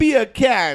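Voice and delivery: very loud, high, attempted British accent. Asked by the group to say it with a British accent: attempted British accent. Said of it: "say beer can with the British accent".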